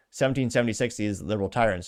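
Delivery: ordinary talk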